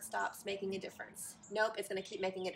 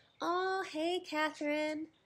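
loving, affectionate voice, pitched higher; 8 semitones higher, 4 dB louder than usual. Switching from teaching to greet a dear friend who just joined, in a love voice. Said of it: "I just went from teacher voice to, like, love voice".

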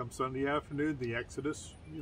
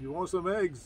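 put-on Louisiana Cajun French accent; 4 semitones higher than usual. Recalling a man who flagged the speaker over, quote him in a cajun louisiana accent. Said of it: "In that Louisiana accent".

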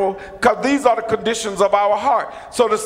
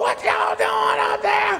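very high, raspy, rough hollering; 11 semitones higher than usual. Speaker tells parents how they react to a bump, imitating a parent hollering. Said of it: "You're always hollering".

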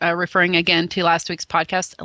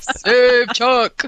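loud, high, belting cartoon superhero voice; 5 semitones higher, 5 dB louder than usual. Imitating an actor's cartoon voice after the interview: Adam Baldwin superhero voice. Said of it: "His superhero voice?".

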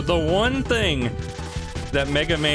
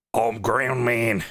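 put-on Australian accent, lower pitch; 4 semitones lower than usual. While playing a game, voicing Ground Man with an Australian accent. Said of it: "Imagining Ground Man with an Australian accent".

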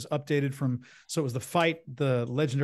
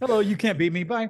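mock nonchalant, breezy, high and raised voice; 9 semitones higher, 6 dB louder than usual. Describing a character who shows up and leaves, act him out with mock devil-may-care nonchalance. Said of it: "Very devil may care".

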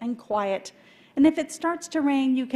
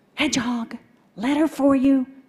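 hushed whisper; 5 dB louder than usual. Reading a storybook aloud, the mailman announcing a letter: whispering. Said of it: "And he whispers".

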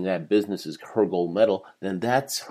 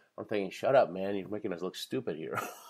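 usual speaking voice

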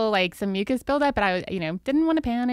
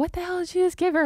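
put-on scream, much higher, faster; 8 semitones higher than usual. Retelling her roommate in the ambulance screaming at a man: retelling a roommate screaming. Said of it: "she's screaming at him like".

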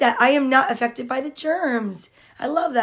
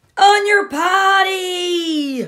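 large, full voice with long drawn-out "potty"; 6 semitones higher, 4 dB louder than usual. Narrator reading a story aloud, giving George's line in a big voice. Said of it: "George said with a big voice".

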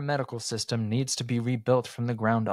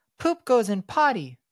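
very high-pitched, soothing, comforting voice; 11 semitones higher, 4 dB louder than usual. Oridan pats Kaladin's knee and reassures him, comforting voice. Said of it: "he said in a comforting voice".

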